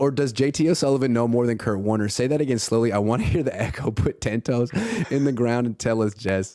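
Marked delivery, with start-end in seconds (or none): none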